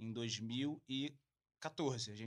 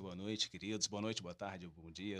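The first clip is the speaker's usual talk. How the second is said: deep, on-air radio announcer voice; 6 semitones lower, 4 dB quieter than usual. Podcast guest who says he is a radio host greeting listeners, radio announcer voice. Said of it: "por isso que minha voz tá assim".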